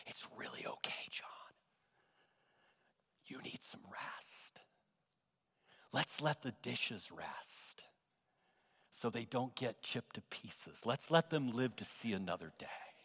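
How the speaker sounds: hushed near-whisper. Retelling what a woman told him while taking the dishes, in a lowered voice. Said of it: "She lowered her voice".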